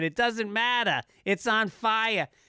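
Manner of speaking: put-on thick Boston accent. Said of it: "with a thick Boston accent".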